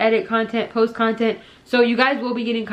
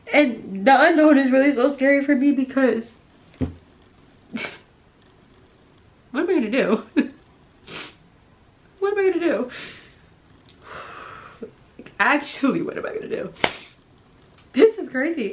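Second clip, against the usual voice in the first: tearful speech, talking through crying; 3 semitones higher than usual. Telling listeners how scary the unknown future is, crying. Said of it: "this is the first time I'm crying".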